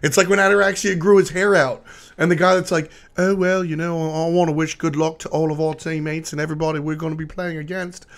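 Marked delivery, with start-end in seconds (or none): 3.2-8.1 put-on English accent. Describing a player's old upbeat persona, the speaker quotes him in a put-on english accent. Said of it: "Shout outs to my English accent".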